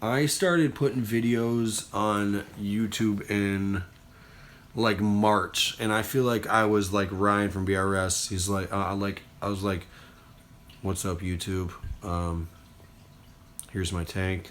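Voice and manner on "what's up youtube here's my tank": complete deadpan, quiet, flat monotone. Speaker recalling their early youtube videos, imitating their own complete monotone. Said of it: "complete monotone".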